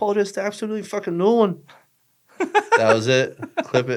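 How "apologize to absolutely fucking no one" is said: put-on high-pitched, defiant voice in an Irish accent. Speaker, apologizing on a podcast, jokes in a Conor McGregor accent. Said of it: "McGregor accent right now. He'd be like".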